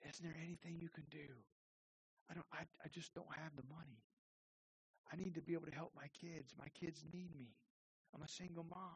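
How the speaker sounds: very soft, quiet, small, near-tears voice. Narrator reads a single mother tearing up as she pleads with a judge, small tearful voice. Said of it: "Starting to tear up, she spoke in a small voice".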